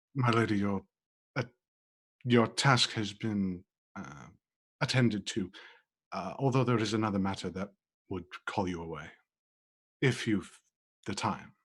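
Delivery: hushed low tone. Briar steps over to Lady Marcia and speaks to her in a very low whisper. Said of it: "in a very low tone, just sort of whisper".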